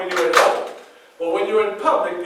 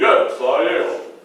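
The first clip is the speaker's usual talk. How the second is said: dry, acted-out sarcastic tone; 3 semitones lower than usual. Retelling his reply when asked if he was the President: mock sarcastic reply. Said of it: "I started to sarcastically say".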